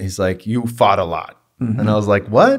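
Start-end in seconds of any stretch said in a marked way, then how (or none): 0.5-1.4 put-on heavy, thick New York accent, laid on. Quoting his strength coach, imitating a thick new york accent. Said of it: "he's got a thick New York accent".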